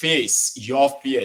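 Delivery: slow, drawn-out, emphatic delivery.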